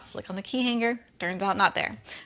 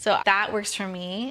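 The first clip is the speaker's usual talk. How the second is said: ordinary delivery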